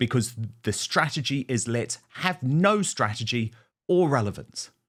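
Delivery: ordinary delivery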